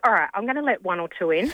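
plain

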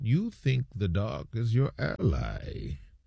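low, slow, deep voice. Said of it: "You do an accent?".

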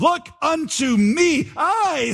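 put-on broad Essex accent. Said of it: "said he in a broad Essex accent".

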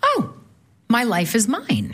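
ordinary delivery

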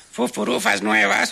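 slow, high-pitched parrot voice.

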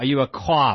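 overdone, exaggerated Boston accent. Showing how movie actors hit the Boston accent too hard: overdone Boston accent. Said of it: "when it's hit too hard".

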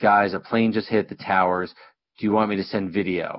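ordinary talk

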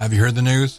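station promo radio announcer voice. Running a radiothon bingo, the speaker announces he'll do the brick announcer, imitating the brick announcer. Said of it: "I'm gonna do the brick announcer".

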